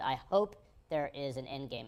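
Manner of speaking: "hope" drawn out and heavily stressed.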